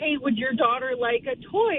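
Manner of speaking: ordinary talk, nothing marked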